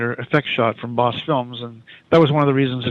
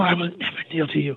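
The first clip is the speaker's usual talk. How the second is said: soft, hushed half-whisper, slightly pitched up; 5 semitones higher, 4 dB quieter than usual. A director shows how an actor should deliver a line, half-whispered. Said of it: "Almost like whisper it".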